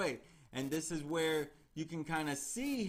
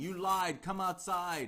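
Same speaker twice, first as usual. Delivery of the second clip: mild, mock half-shouted delivery; 3 semitones higher than usual. Retelling a true-crime account, a man at a door: retelling a shout. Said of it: "he's shouting".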